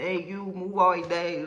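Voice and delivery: put-on very thick, drawn-out Mexican accent. Quoting an immigration agent from the story, in a heavy Mexican accent. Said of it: "the biggest Mexican accent you could ever think of".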